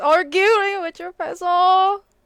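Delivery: put-on high, loud, slow cooing baby talk.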